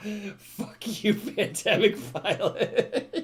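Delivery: slow, high, laughing mock delivery.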